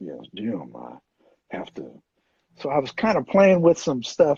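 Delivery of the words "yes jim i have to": very low, deep, slow and soft Southern drawl. Performer showing the voice he came up with, in a slow, low David Harrington voice. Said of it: "this slower, lower way of speaking, this David Harrington voice".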